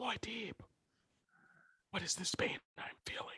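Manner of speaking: breathy, hushed whisper, very quiet. Imitating a film character's inner thoughts, mock whispering. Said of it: "Why are you whispering?".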